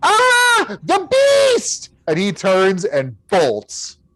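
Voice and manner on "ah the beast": put-on very high, terrified boy's shriek, drawn-out ah. Game master voices the boy seeing an illusory elephant: boy shrieking. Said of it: "The boy shrieks".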